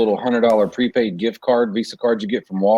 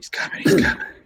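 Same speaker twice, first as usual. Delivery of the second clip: secretive, hushed stage whisper, barely voiced. Retelling a prank call on a phone scammer: imitating own whisper. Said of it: "And then I'll start whispering".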